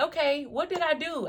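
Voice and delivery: high, drawn-out, tearful weeping voice. Retelling being locked in a small cold cell: retelling own past crying. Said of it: "I just remember crying, like".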